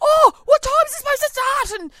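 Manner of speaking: frantic panic, very high. Retelling a phone call about a forgotten gig: imitating someone freaking out. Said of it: "freaking out, going".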